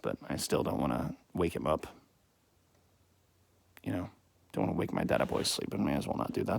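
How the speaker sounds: quiet, hushed, breathy half-whisper. Not wanting to wake their sleeping dad, talking quietly. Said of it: "So I'm talking quietly".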